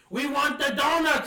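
sudden shrill scream, very high and very loud. Retelling the speaker's brother suddenly screaming during a phone order: retelling a scream. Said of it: "he just screamed out of nowhere".

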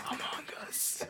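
hushed, breathy, whispered cry. Acting out a wife giving birth calling to her husband: imitating someone yelling. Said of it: "she just yells".

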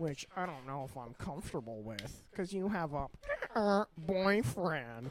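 deliberately dumb, awkward voice, slow and drawn out. Retelling own words said to a woman: imitating own stupid voice. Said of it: "And I did it in that stupid voice".

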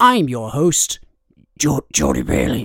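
slow, drawn-out, swinging, swooping character voice. Podcast host introducing himself at the episode start, Geralt voice. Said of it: "I'm trying to do my Geralt voice".

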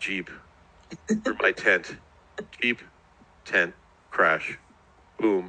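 dazed, incoherent mumbling, barely making sense. Retelling how a man was dug out of rubble, the speaker is imitating Henry's incoherent mumbling. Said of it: "incoherently mumbling like".

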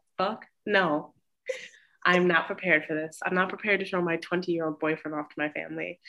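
ordinary delivery

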